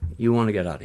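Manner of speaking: put-on Italian accent with broken English. Retelling an old Italian tool maker's advice: imitating an Italian accent. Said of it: "Italian accent".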